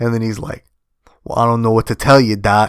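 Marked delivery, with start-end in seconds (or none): 1.2-2.7 put-on New York accent. Describing an actor's performance as Mark, imitating him in Mark's New York accent. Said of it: "almost like a New York accent when he's Mark".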